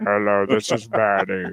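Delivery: put-on low, very slow robotic computer voice. Joking about a host using an AI voice on air: fake AI voice. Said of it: "Did one of those A I voices".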